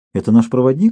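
ordinary talk

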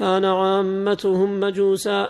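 plain

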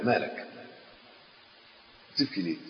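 very soft, gentle, soothing voice.

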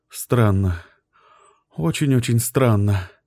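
low muttered mumble. A wife, just woken from a daytime dream, answers her husband: muttered. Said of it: "пробормотала она".

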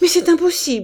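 very high cried-out exclamation. A man, just told coldly that she may marry, crying out. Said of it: "Il s'écria".

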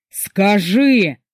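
enraged, furious shout, one word stretched long. Murat, towering over the narrator, demanding an answer; a furious shout. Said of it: "яростный крик".

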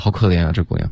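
normal talking voice

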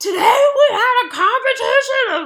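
very loud, very high-pitched screaming yell. Retelling how a houseguest yells at the camera: imitating Johnny Mac yelling. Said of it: "Johnny Mac, he's like".

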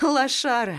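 high, sarcastic, jeering, sniggering delivery. A girl taunts the narrator's son, snickering sarcastically. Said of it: "язвительно хихикает Дуня".

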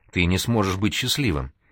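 ordinary delivery

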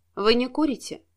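ordinary delivery, nothing marked

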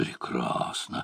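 barely voiced, very hushed whisper. Karma watches the Spaniards push a musket through the door, whispering. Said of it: "прошептал Карма".

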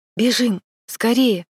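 exclaiming, calling out. Reading a story aloud, voicing a boy character's line: exclaiming. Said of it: "воскликнул Гарни".

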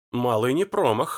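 ordinary delivery

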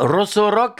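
fake Italian-accented speech. A host repeats a band name, saying it with an italian accent. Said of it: "avec un accent italien".

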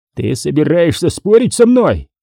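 high, furious, enraged voice. Answering someone who just objected to him, roaring. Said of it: "взревел Харрисон".

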